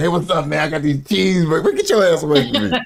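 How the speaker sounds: very high, strung-out voice. Describing people strung out on the street, speaker acts one out: imitating a strung-out addict. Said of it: "they just strung out on the street".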